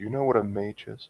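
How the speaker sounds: soft, secretive half-whisper leaning close. Playing a character who leans closer and asks about mages: half-whispering. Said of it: "she comes closer and just whispers to you".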